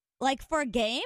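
ordinary delivery

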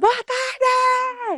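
cheerful, very high, excited shout.

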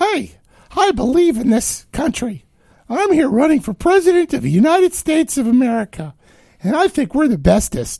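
put-on cartoon mouse voice. Mimic Pete telling everybody he is running for president, in a Mickey Mouse voice. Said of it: "I don't know why Mickey Mouse comes out".

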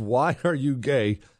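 plain

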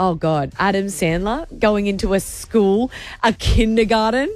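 ordinary talk

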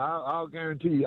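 ordinary delivery

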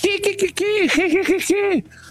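very high, irritating cricket-like chirp.

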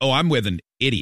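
ordinary delivery

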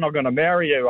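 plain

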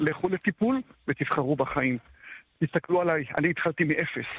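ordinary talk, nothing marked

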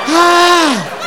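gasping hard for breath.

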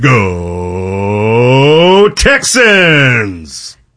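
put-on old radio announcer-style delivery. Asked to do a team cheer, in his old radio voice. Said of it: "Let me see if I can get my old radio voice".

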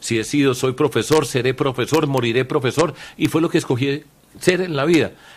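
plain

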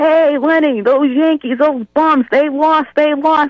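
yelling out loud in a taunting, jeering manner.

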